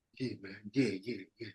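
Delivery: put-on very hushed, emotional, choked-up murmur. Retelling an emotional phone call with a friend: imitating own emotional voice. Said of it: "I was getting all kind of like that".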